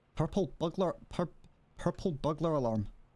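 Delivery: put-on Scottish accent. Offering to put on a Scottish accent, saying a test phrase: put-on Scottish accent. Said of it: "Can I put on a Scottish accent?".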